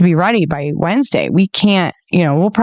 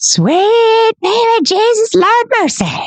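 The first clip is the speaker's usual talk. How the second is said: very high thrilled, excited cry, "sweet" stretched. Retelling own reply on the phone: imitating own excited outburst. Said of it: "You're excited".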